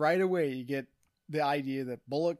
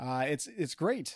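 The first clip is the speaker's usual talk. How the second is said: ordinary talk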